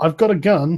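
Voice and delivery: trembling, shaky, frightened voice. Voicing a man behind a door who answers the players: voice shaking with fear. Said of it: "you can definitely hear his voice shaking when he replies".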